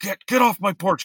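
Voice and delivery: very high-pitched, shrill, loud shouting. Speaker retells what the man on the porch said: imitating a man yelling. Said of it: "he's just yelling at me".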